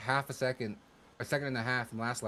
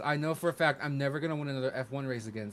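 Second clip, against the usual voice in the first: plain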